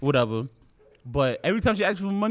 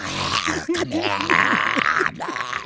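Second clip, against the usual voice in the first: put-on monster voice, lower in pitch; 5 semitones lower than usual. Retelling acting like a monster when asked for money: imitating own monster voice. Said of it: "the monster shit scared the shit out of her".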